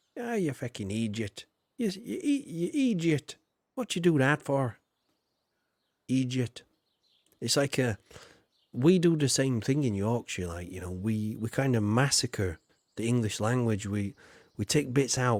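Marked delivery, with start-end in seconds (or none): 0.1-6.6 speaking in Irish dialect. Speaker showing how idiot is pronounced in the Irish dialect, Irish accent. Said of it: "in the Irish dialect".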